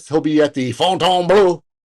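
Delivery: Fontainebleau said with put-on French pronunciation. Reading out tour dates, saying the venue name in a French accent. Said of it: "That's my French accent".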